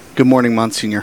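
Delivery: ordinary delivery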